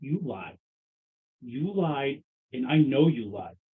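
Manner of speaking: slow, light, hushed half-whisper. Voicing a character half-whispering into another's ear: half-whispering in character. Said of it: "I'm lightly whispering into his ear".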